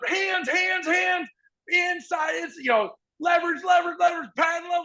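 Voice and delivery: very high, shouted yelling. Speaker recalls standing beside another coach, both shouting cues, retelling yelled coaching cues. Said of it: "like you're yelling all this stuff".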